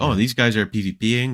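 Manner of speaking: ordinary talk, nothing marked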